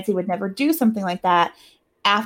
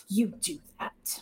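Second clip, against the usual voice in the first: very quiet, breathy, whispered snarl; 12 dB quieter than usual. Recapping a movie, voicing the detective's reply to Richard, in a mock snarl. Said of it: "the te- detective snarls".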